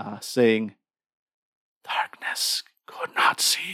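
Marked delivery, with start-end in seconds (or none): 1.8-3.7 slow, high, eerie, ghostly whisper. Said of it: "you distinctly hear the whisper back".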